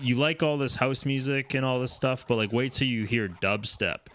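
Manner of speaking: normal talking voice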